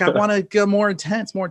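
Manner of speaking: put-on high, loud begging voice of a four-year-old.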